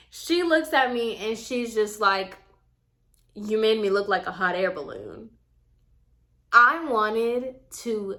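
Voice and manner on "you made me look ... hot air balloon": mock blunt, straight-faced delivery, no laugh. Retelling what a salon client said after seeing her hair: imitating a straight-faced remark. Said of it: "she said that so straight face".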